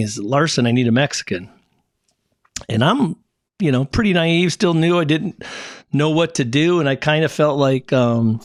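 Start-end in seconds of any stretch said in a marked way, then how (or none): none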